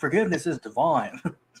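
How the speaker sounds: attempted British accent colored by California accent. Mocking an actor's movie accent, the speaker does Keanu Reeves's California accent trying British. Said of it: "he's like this California accent trying to do British".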